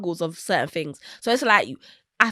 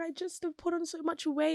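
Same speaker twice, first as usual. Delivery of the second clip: put-on crying, much higher, quieter; 8 semitones higher, 9 dB quieter than usual. Retelling a vlogger's words to her boyfriend, imitating someone crying. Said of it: "she's crying".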